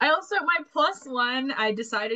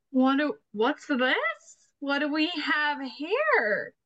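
put-on very slow, stretched, gossipy, nosy old-lady drawl; 4 semitones higher than usual. Explaining how they'll act a scene, the speaker voices a curious gossipy old lady. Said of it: "I'm curious old lady who loves to gossip".

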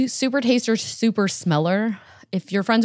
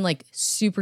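ordinary delivery

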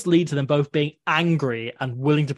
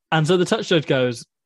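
ordinary talk

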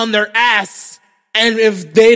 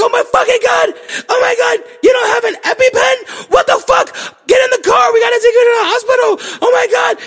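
very high, rushed, frantic panicking voice. Retelling how the speaker's girlfriend reacted to a bee sting: imitating girlfriend freaking out. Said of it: "my girl freaks the fuck out".

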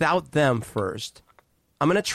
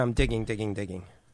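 plain

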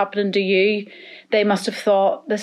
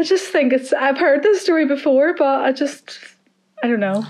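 tearful, crying speech, much higher; 5 semitones higher than usual. On a podcast, reacting to a guest's story, crying while talking. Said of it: "I'm crying again".

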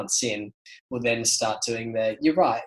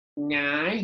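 very nasal no, pushed straight through the nose; 4 semitones higher than usual. Imitating how everyone says no: "no" straight through the nostrils. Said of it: "straight through the nostrils".

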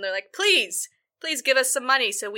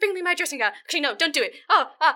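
high, fussy, foppish dandy voice; 7 semitones higher than usual. Retelling a man ordering his attendants as visitors arrive: foppish dandy voice. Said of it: "He's sort of that foppish dandy".

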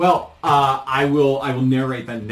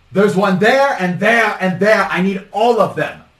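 high, loud shouting. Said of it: "She says".

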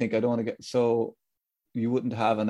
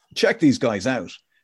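put-on American-accented radio DJ voice, louder; 6 dB louder than usual. Redoing the radio jock impression when asked again: Tony Fenton impression. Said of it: "That's him".

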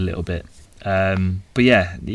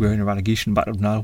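odd, weird put-on Geordie accent. Talking about a man with a funny northern accent, put on a weird Geordie accent. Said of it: "That was a weird Geordie accent".

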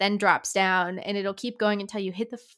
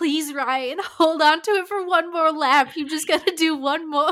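loud, high-pitched, acted-out fan scream; 8 semitones higher, 5 dB louder than usual. Retelling watching the last race in the garage: imitating screaming at the tv. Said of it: "we were out there watching and just screaming".

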